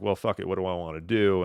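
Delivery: ordinary talk, nothing marked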